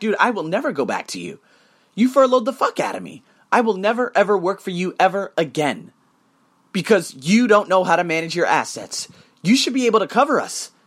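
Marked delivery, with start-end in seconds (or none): none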